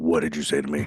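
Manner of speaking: put-on plain, very deep low voice, no accent. Retelling a story, quoting a man's question, in a deep voice. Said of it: "Just deep voice".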